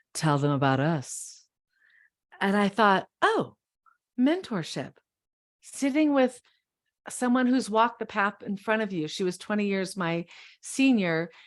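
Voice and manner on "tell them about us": deep, husky, deep-set tone. Author recalls what an older mentor said to them, imitating Connie's deep husky voice. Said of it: "in her deep and husky voice".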